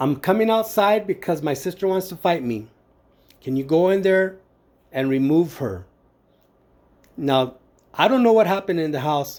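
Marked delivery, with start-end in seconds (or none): none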